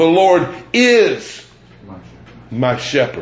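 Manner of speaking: IS drawn out and heavily stressed.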